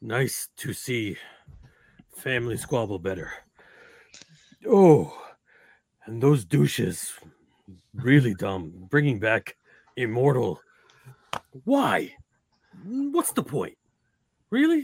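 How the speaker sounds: winded, huffing and panting between words. A character shows up in the middle of a family squabble, out of breath. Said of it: "I show up out of breath".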